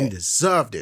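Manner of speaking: ordinary talk, nothing marked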